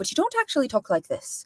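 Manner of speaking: exaggerated Irish lilt. Explaining how to do an Irish accent and demonstrating it with an Irish lilt. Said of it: "you give a bit more of a lilt too".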